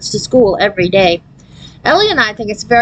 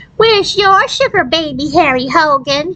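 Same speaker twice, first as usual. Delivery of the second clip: high, whiny, taunting, parrot-like mocking voice; 7 semitones higher than usual. A narrator reads a classmate echoing the narrator's words: Harry Hogan's whiny echo voice. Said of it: "whiny voice he uses to echo everything I say".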